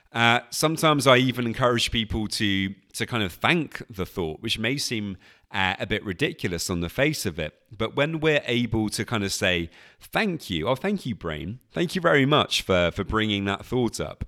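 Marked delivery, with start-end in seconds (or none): 10.1-14.2 sarcastic, mocking edge. Showing how to thank an unwanted thought: sarcastic. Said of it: "I'm kind of mixing it in with some sarcasm".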